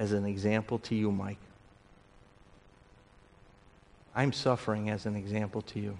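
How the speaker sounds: hushed, soft voice. The speaker voices what Paul would say to Mike, in a quiet voice. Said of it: "Paul would say in a quiet voice".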